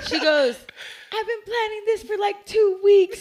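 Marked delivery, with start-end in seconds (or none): 1.1-3.2 thrilled, shrill, very high and very loud. Telling how a woman who broke into their house bragged to them, imitating her excitement. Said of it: "she's like so excited to tell me".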